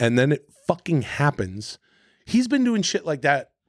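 ordinary delivery

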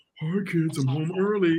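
warped, slowed, drawn-out demon voice. Retelling an old commercial, he replays the kid's line in a slowed-down demon voice. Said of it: "Play that shit back slow".

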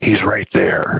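imitated dazed, trance-like tone. Retelling what the wife said while staring behind him: imitating a dazed, trance-like voice. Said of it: "in a daze, like, in a trance".

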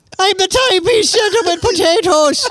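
mock leprechaun voice. Joking about a watch-selling character, put-on irish accent. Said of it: "He's a leprechaun".

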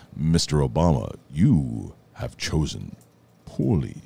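put-on very low, slow, rumbling deep voice.

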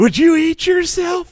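seductive put-on voice. Asking a silly question to the others: seductive Will Ferrell voice.

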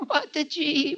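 put-on priest voice, very high, slow, pleading.

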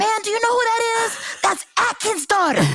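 mock shout, high-pitched.

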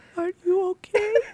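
put-on very gentle, high German accent. Retelling a stranger in the next bathroom stall asking after them, gentle german accent. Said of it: "in this very gentle German accent".

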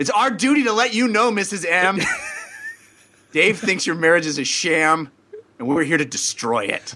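dry, sarcastic, fake-serious put-on solemnity. Continuing the mock announcement to the wife: mock-serious sarcastic tone. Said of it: "you're being sarcastic".

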